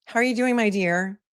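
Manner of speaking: creepy, unsettling-sounding voice. Retelling how a man greeted someone on a phone call: imitating a creepy voice. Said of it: "So creepy".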